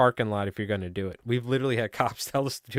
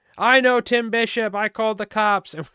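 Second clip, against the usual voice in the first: very high, louder, furious shrieking rant; 12 semitones higher, 7 dB louder than usual. Recounting a man who screamed at them, retelling a man's screaming. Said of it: "And he's screaming this".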